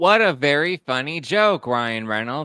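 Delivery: strongly sarcastic tone. Reacting to a joke just heard in a clip, sarcastic. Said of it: "I say that with sarcasm".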